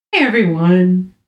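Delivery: pitch dropping on everyone. Imitating the other speaker's greeting: imitating a greeting dropping at the end. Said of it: "It just sounded, you went".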